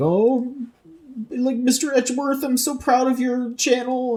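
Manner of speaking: very high, drawn-out, tearful sobbing cry. Speaker acting out what Gumshoe would say to Edgeworth, imitating Gumshoe crying. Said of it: "so he'd be like crying".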